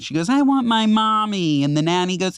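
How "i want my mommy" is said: mock tearful six-year-old, high, slow, crying. Retelling a six-year-old crying for her mother: imitating a crying child. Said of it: "She's crying".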